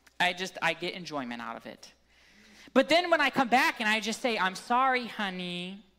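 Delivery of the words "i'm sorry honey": small, sugary, cute, sweet little voice. Apologizing after pushing all the buttons, in a cute, sweet little voice. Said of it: "in my cute, sweet little voice".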